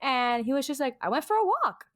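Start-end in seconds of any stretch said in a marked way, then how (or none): 1.0-1.7 super calm, unfazed, easygoing, slightly higher voice. Retelling what a brother said after coming back from getting lost: imitating Martin super calm. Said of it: "super calm".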